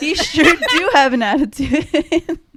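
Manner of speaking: loud, words breaking up with giggles. Trying to finish a joke while laughing while talking. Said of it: "but I can't even talk anymore".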